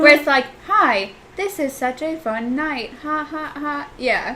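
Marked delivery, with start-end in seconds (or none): 0.7-3.9 slow, early-computer automated robot voice. Complaining about outdated automated voices, demonstrating an old automated robot voice. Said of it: "robot vo- voices from, like, the first age of computers".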